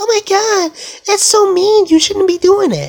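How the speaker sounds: very high, squeaky cartoon voice. Mocking how a therapist would react, the speaker uses a fake Mickey Mouse voice. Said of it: "Fake Mickey Mouse voice".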